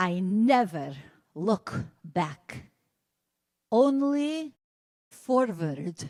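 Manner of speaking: put-on heavy Hungarian accent laid on thick, drawn out. Quoting her answer when asked about moving to Brooklyn: thick Hungarian accent. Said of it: "She said it in her thick Hungarian accent".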